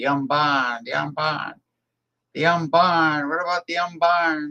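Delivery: put-on New England accent, insistent, pressing, repeated. Retelling how an old caller from Maine spoke: imitating a caller's New England accent. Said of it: "he used to do it with the New England accent".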